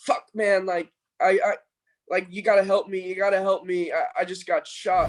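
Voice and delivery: desperate yelling. Retelling what a man in line yelled after getting shot: imitating someone yelling. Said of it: "he just starts yelling".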